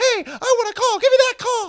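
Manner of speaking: very high, loud, angry yelling voice. Teasing Tom Brady about his playing days, the speaker does the high-pitched Tom Brady angry voice. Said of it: "That's the high-pitched Tom Brady angry voice".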